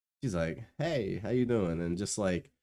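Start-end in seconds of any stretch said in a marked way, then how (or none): 0.8-1.8 put-on cold, standoffish tone, lower pitched. Retelling how she answered a hello at a party: imitating a standoffish greeting. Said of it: "She's standoffish as fuck".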